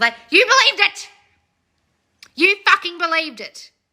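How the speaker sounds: full-on loud shouting, one word hammered home. Talking to viewers on a live stream, yelling at them. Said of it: "Why are you yelling?".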